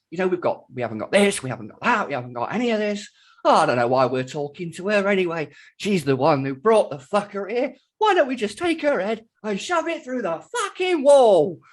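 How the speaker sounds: mock terrified, loud, rising ranting tirade. Retelling a film character listing missing weapons: imitating a character's rant. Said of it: "he goes on a rant".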